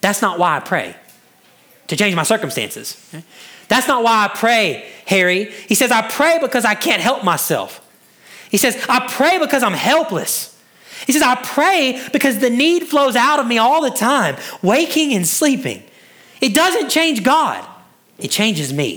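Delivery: bewildered.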